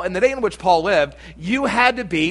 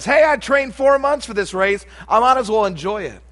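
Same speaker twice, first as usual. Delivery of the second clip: high-pitched, loud yelling. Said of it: "I could hear 'em yell back".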